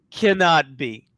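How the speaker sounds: usual speaking voice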